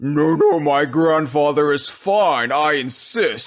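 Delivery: creepy, scary demon-man voice. Joking about who is reassuring everyone, quoting a demon: scary demon man voice. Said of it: "a scary demon man is saying".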